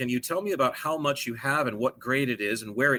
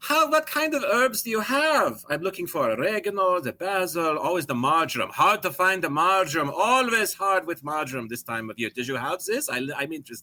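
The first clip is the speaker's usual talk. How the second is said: fake, put-on Italian accent, pitched up; 5 semitones higher than usual. Pretending to be an italian immigrant when back with this guy, in a put-on italian immigrant accent. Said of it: "pretend like I'm the Italian immigrant".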